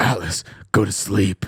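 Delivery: growling caped superhero character voice. Retelling telling Atlas to go to sleep in a growling Batman voice. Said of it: "I'd go like this, In like a growl, like a Batman".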